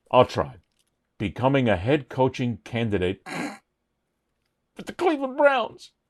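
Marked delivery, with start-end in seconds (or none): 1.2-5.9 words broken up by laughter. Trying again to say a news item: laughing while talking. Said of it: "I can't say it without laughing".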